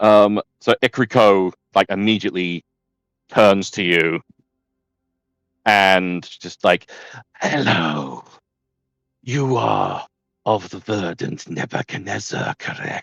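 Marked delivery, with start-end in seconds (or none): 7.4-13.0 swarm voice like a million spiders at once. Voicing a character who greets the arriving player: voice of a million spiders. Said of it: "the voice of a million spiders".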